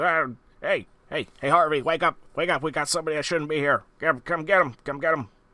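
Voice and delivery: high-pitched, goblinish hobgoblin creature voice. Voicing a hobgoblin who spots intruders and calls for help: hobgoblin voice. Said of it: "a creature that you would recognize as a, uh, a hobgoblin".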